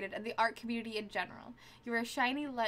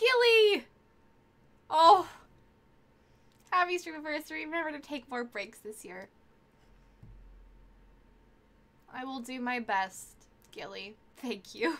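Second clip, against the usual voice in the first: tearful, crying while speaking; 7 dB louder than usual. Streamer thanks a viewer on her stream anniversary, crying. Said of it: "I am currently crying".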